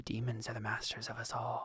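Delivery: muttered under breath. Voicing a character muttering after her ritual: quietly under her breath. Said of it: "she says quietly under her breath".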